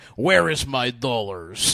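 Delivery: loud, clumsy, bad fake American accent. Retelling a cousin's impression of an American: cousin's fake American accent. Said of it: "That was his American".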